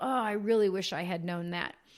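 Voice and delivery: ordinary talk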